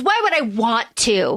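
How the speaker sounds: put-on petulant, huffy delivery. Retelling a character's reply to the ambassador: imitating Robert petulantly. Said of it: "like, petulant kind of way".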